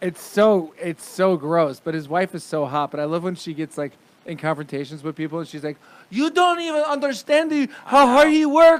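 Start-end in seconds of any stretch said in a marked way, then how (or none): 6.1-8.8 put-on Brazilian accent, higher and louder. Imitating a celebrity wife in a confrontation: imitating Gisele Bündchen's accent. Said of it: "I sound like, uh, Spanish".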